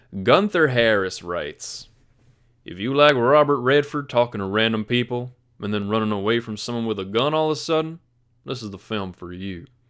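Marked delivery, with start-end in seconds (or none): 2.7-9.7 put-on deep Texas cowboy voice. Reading a made-up Texas cowboy's film review aloud, Sam Elliott-like cowboy voice. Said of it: "You honestly sounded a little bit like".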